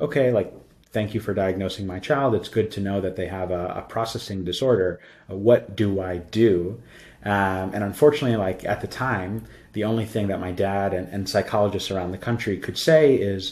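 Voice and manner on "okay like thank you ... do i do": normal talking voice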